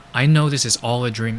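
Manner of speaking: normal talking voice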